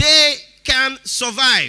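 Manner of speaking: slow, deliberate delivery. Repeating a point to the audience: spoken slowly. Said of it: "I'll put it slowly again".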